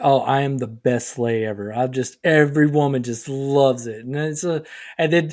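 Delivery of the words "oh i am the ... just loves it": mocking, boastful man voice. Mocking the kind of guy who brags about himself: imitating a boastful guy. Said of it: "those dudes that are like".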